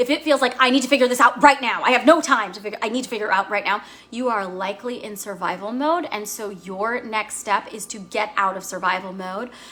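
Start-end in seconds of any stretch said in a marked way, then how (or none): 0.6-3.8 fast, loud, urgent rushed voice. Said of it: "a sense of, like, urgency".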